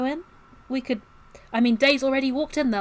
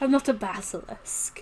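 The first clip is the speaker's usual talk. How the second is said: laughing while talking in a put-on character voice; 3 semitones lower than usual. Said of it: "She laughed".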